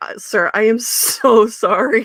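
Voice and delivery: very slow, mortified, drawn-out "sorry". Retelling a flustered apology to a customer: retelling own mortified apology. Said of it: "I was mortified".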